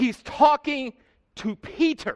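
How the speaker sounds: slow, weighty stress on talking and the name. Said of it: "I emphasized the word".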